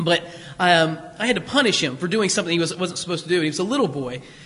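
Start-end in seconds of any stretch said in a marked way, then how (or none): none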